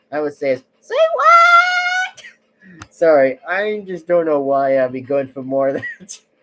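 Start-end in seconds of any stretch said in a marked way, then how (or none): 0.8-2.2 squeaky, very high, loud voice with drawn-out what. Showing how high the voice can go: very high-pitched voice. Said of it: "I can get my voice even higher".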